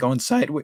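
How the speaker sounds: voice cracks, breaking mid-phrase. Going over a price chart, voice cracking. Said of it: "my voice cracked there".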